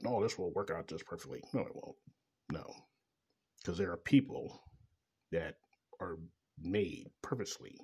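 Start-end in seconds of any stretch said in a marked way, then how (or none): none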